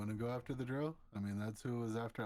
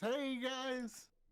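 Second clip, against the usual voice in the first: put-on drunken slurring in a very high voice. Playing a character faking drunkenness, greeting others: fake drunk slurring. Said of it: "pretending that I'm drunk. Kinda staggering, slurring my words".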